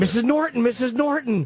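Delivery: put-on shrill, very high, frantic child's shriek. Retelling a childhood fight where a friend ran away: imitating a kid screaming. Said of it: "he was screaming".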